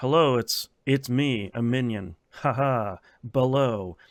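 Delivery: slow, flat, dry deadpan non-actor line reading. Mocking how a non-voice actor reads an animated movie line: flat dry read. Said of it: "it's like it's a dry read".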